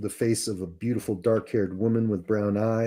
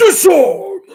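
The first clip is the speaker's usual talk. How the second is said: shrill, loud, high-pitched commanding tone; 15 dB louder than usual. Narrator voices Rilgar, servant of Arcanith Maul, turning to a player: commanding voice. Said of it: "and in a commanding voice says".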